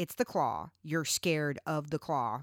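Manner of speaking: gloating, teasing, taunting tone. Retelling a game-night taunt while holding up a pointer finger: imitating mom's taunt. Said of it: "a taunt that she would do".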